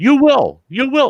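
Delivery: loud, high-pitched, shrill urgent insistence. Retelling a radio caller's demand to fetch father: imitating an urgent voice. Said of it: "I could just hear the urgency in his voice".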